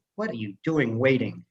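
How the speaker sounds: ordinary talk, nothing marked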